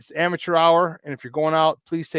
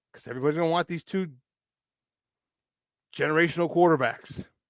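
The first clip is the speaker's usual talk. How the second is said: heavy, dripping, mock-earnest sarcasm; 6 dB quieter than usual. Talking about two quarterbacks that everybody wants: heavy sarcasm. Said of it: "Say that with a, a lot of sarcasm".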